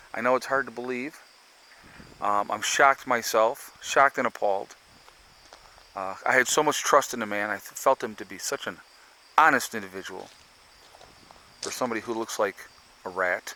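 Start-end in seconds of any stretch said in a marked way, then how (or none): none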